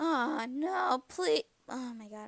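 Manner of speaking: slow, pleading voice, cracking and breaking. Narrating a painful memory while feeling too much guilt, voice cracking. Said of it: "my voice is cracking".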